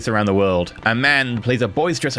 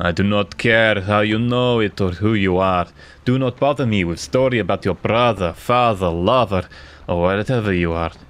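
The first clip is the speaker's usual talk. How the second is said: steady, emotionless character voice; 3 semitones lower than usual. Narrator voicing Diabolito as you take a seat: Diabolito's steady emotionless voice. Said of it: "Diabolito speaks in a steady and emotionless voice".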